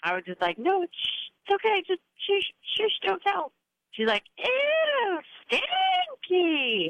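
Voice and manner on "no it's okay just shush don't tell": put-on embarrassed hush, much higher. A mother retells hushing her two-year-old daughter in public, retelling embarrassed hushing. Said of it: "it was so embarrassing".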